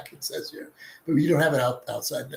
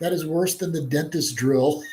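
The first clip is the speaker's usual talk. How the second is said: ordinary delivery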